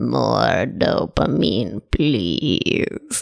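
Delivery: goofy, low, creaky, rough lizard voice. Explaining dopamine and instant gratification to listeners: lizard brain voice. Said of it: "Did you like my lizard brain voice?".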